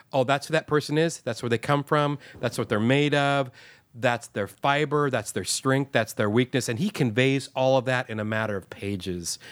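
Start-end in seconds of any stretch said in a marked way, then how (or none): none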